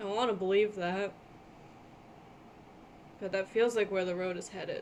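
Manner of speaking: very soft whisper. Playing a character who speaks only to herself, whispering to herself. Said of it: "She kind of whispers to herself".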